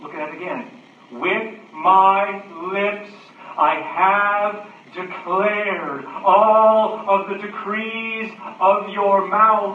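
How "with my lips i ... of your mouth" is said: loud, noisy, very slow, declaiming voice. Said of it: "notice how loud and noisy the verse is".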